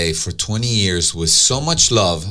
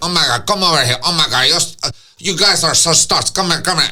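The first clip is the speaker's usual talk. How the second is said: put-on Venezuelan accent, pitched up higher; 8 semitones higher than usual. Retelling how the owner greeted the speaker and friends, imitating Louis's Venezuelan accent. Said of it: "he has the funniest the way he talks".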